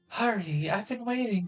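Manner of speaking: high-pitched woman's voice. Voicing a female character, in a high-pitched female voice. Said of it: "She's got such a high pitched voice".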